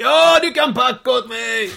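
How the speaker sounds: very high, shrill, loud, drawn-out shout. Retelling how he called out his answer: imitating someone shouting. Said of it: "då ropar han så här".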